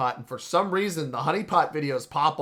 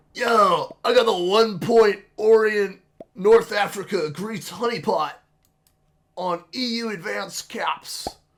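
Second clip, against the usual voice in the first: loud, high-pitched goofy voice; 6 semitones higher, 5 dB louder than usual. Imagining what a fellow player might say on a YouTube channel, goofy voice. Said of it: "Forgive my goofy voice".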